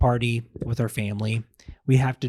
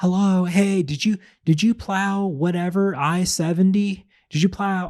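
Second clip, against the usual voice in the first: put-on granny voice, high, hollering and screaming; 8 semitones higher, 4 dB louder than usual. Retelling how her grandmother yelled to a snowplow driver in his truck, imitating her screaming. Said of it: "She's over here screaming at him".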